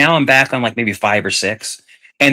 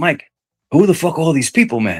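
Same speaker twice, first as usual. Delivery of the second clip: put-on thick, laid-on Spanish accent; 3 semitones higher than usual. Retelling what a man said to you, in his thick Spanish accent. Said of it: "he has a really thick uh Spanish accent".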